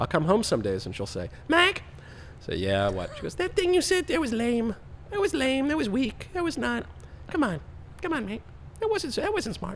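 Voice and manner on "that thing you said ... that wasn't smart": put-on cartoon kid voice, much higher.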